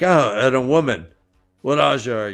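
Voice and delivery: raspy, hoarse voice. Voicing Logain as he rolls out of a coffin-like cell, raspy voice. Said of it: "his voice is all raspy".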